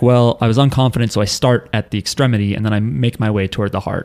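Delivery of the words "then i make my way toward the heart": ordinary talk, nothing marked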